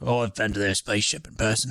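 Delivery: put-on cockney accent slipping into Australian.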